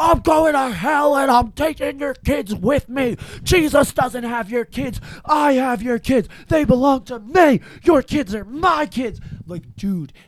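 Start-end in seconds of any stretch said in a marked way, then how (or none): 0.0-9.2 shrill, very high, wild flipping-out screaming. Recounting a man's insane tv interview the day before he died, imitating someone screaming at people. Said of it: "he's just screaming at like these people".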